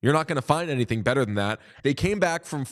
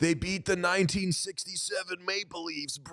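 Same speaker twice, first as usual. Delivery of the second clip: put-on sleepy California bro voice, quieter; 5 semitones higher, 8 dB quieter than usual. Mocking Sean's talk about the Coyotes, the speaker imitates him: Sean as a sleepwalking Cali bro. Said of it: "my impression of you is a sleepwalking Cali bro".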